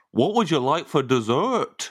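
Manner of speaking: put-on Birmingham accent, an attempt. Prompted for one more regional accent, attempted Birmingham accent.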